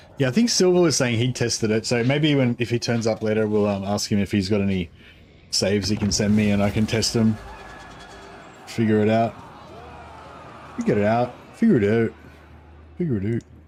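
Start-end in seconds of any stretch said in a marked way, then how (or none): 8.7-13.4 botched put-on Canadian accent attempt. Repeating a short phrase as a joke: attempted Canadian accent. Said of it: "I was trying to do a Canadian accent".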